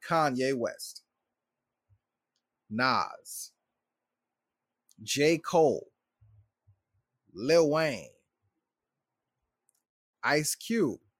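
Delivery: slow, unhurried, deliberate listing delivery. Reading out a list of names for the audience to notice, saying names slowly. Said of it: "I'm going to say these names slowly".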